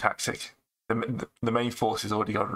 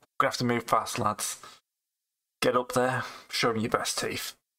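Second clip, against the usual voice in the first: gruff in-character orc voice; 2 semitones higher than usual. Playing the orc captain, urging his soldiers up the hill: voicing the orc captain. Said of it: "as the captain".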